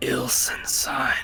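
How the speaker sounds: guttural whisper. A game master voices the drowned god speaking to the players, the drowned god's whisper. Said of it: "you can hear him whisper".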